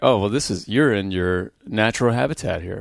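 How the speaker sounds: ordinary delivery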